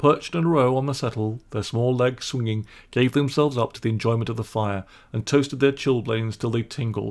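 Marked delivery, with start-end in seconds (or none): none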